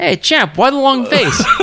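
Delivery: put-on Scottish accent pitched very high. Telling a story, speaker quotes what Jimmy said to a guy; imitating Jimmy's Scottish accent. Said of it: "Jimmy's got his Scottish accent".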